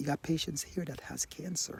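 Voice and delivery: quiet, hushed voice.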